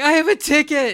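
put-on high, loud sobbing, outraged and perplexed. Retelling a brawl, the speaker acts out Jericho's protest, imitating Jericho crying. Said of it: "And he's crying".

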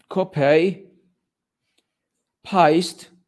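loud, over-the-top, exaggerated put-on British accent. Copying a link aloud while joking about how British people speak: put-on British accent. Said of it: "Is this how you British people speak?".

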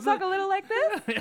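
very high puppet voice, up an octave. Trying out a puppet voice as suggested: voice an octave higher.

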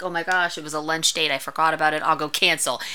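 ordinary delivery

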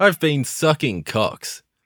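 loud shouted delivery. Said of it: "don't have to shout it".

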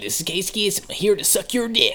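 rough, heavily gravelly radio-host announcer voice. Taking turns trying a Casey Kasem impression with others: gravelly Casey Kasem impression. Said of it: "You're a little bit too gravelly".

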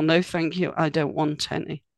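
falling tone, sentence end fading away on any. Explaining how the ends of sentences can sound, demonstrating a falling tone, trailing off. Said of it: "the end of the sentence is going down and dying".

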